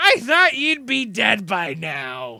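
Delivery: put-on elderly halfling character voice. Voicing an old halfling man with a cane greeting a friend: old halfling man voice. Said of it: "you see a small halfling, uh, like, old man".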